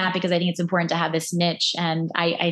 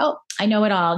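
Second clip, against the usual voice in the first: ordinary talk, nothing marked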